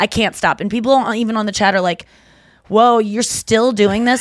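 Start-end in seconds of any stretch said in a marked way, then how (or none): 2.7-4.2 mocking, snarky, judgmental tone. Retelling judgmental comments from people in the chat: imitating snarky chat comment. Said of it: "little snarky comments".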